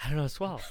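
mock, frantic, scared, alarmed blurt. Retelling freezing before a live tv interview: retelling own panic. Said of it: "I started panicking, going".

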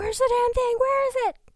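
shrill, very loud, high-pitched yelling. Retelling how he is yelling upstairs: imitating someone yelling. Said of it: "He is literally yelling at Mim upstairs".

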